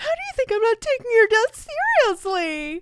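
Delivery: shrill, very high-pitched, swooping hysterical outburst. Quoting a mom's line to her daughter from a scene, imitating a hysterical outburst. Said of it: "she's hysterical".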